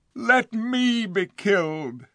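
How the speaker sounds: very high crying out. Narrator reads the king's plea in the dark, silent wood, crying out. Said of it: "cried the king".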